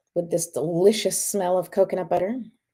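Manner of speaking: normal talking voice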